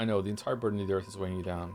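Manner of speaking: normal talking voice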